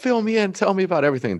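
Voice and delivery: put-on very high, super-excited, gushing voice. Retelling how Mom greeted them when they walked in: imitating excited mom. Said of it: "Mom was super excited".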